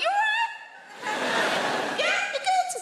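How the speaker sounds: voice climbing very high, very slow, drawn-out. Retelling greeting a man found on the sofa, high-pitched voice. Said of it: "when our voices go high like that".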